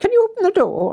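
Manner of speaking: put-on lovely Scottish accent, pitched very high. Retelling what the local doctor said at the door: Doctor McEachin's Scottish accent. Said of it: "Lovely Scottish accent".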